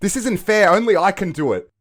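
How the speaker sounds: shrill, very high and very loud yell. On a podcast, arguing over who gets to do the introduction, yelling. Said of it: "Don't fucking yell at me".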